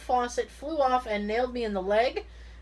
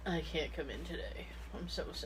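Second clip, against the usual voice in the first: put-on sick voice, very soft and very quiet; 7 semitones lower, 14 dB quieter than usual. Showing the voice she uses when calling in sick, fake sick call-in voice. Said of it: "This is my call-in voice".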